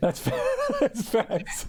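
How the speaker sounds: high, slow speech, laughing through the words.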